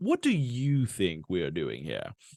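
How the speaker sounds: terrible character voice, low and swooping. Describing the episode where Moss meets a cannibal, speaker does a terrible Moss impression. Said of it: "That was a terrible Moss impression".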